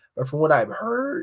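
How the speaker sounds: voice cracking. With a messed-up throat, the speaker keeps talking about a project, voice cracking. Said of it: "oh, my voice cracked".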